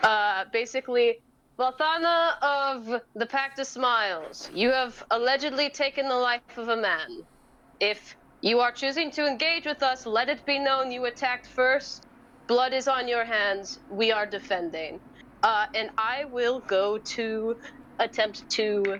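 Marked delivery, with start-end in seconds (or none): 1.6-15.0 projecting voice sent out to carry far. Voicing a monk calling out a warning to a foe: loud carrying voice, not screaming. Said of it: "speak up in a voice that's not, like, screaming, but is definitely loud enough to carry".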